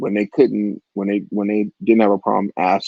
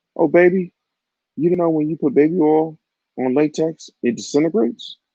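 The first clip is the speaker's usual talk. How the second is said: mock casual, offhand, nonchalant tone, pitched up; 7 semitones higher than usual. Telling a story, quoting what a woman said to the speaker: mock-nonchalant. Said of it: "ever so nonchalantly and goes".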